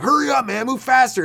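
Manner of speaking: impatient, angry, very high-pitched shout. Retelling a guy on a streetcar stuck in traffic, the speaker retells his yell. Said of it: "this guy's yelling like".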